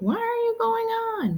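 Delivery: high mock yell. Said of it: "Maybe you're starting to yell at the screen".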